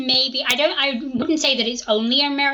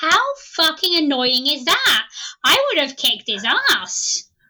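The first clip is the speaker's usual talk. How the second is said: fed-up, indignant, annoyed and exasperated delivery; 3 semitones higher than usual. Retelling own reaction to a book's sheriff: retelling own annoyed reaction. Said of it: "the most perfect delivery".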